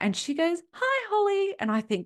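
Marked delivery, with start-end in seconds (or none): 0.7-1.5 bright, bubbly, perky voice pitched very high. Retelling the agent answering the phone: imitating the agent's perky voice. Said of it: "Why is she so perky".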